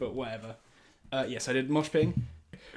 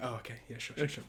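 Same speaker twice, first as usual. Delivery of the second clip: soft, sheepish, embarrassed tone; 8 dB quieter than usual. Retelling how a mother answered at a crowded concert: imitating a sheepish reply. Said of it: "she very sheepishly went".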